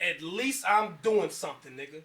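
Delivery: normal talking voice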